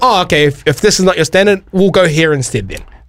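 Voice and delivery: normal talking voice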